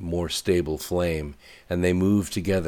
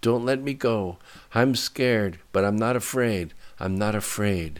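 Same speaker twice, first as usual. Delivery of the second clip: barely breathing, higher; 4 semitones higher than usual. A woman clinging to a man as the floor shakes, barely breathing. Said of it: "barely breathing".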